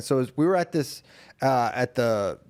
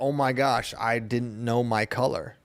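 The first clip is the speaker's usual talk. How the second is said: usual speaking voice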